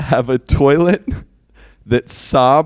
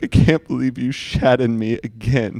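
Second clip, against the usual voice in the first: slow, mournful, sad sobbing; 4 dB quieter than usual. Joking about a toilet talking to its owner, mock-sad toilet voice. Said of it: "they're gonna be like sad".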